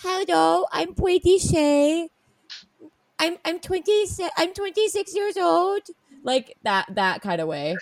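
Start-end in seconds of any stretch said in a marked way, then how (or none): 0.0-5.8 put-on high, slow little kid voice sounding out words. Retelling reading a player's intro to oneself: imitating a little kid voice. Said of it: "little kid voice".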